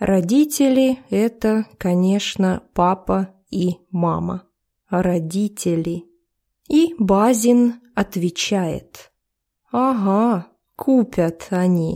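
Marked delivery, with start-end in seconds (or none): 9.7-12.0 sarcastic, falling pitch on "yeah right". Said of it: "саркастической".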